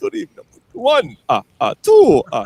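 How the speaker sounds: high, swooping put-on vampire voice. Asked how he would have done the intro, he shows the Count vampire voice. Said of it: "I like the Dracula thing".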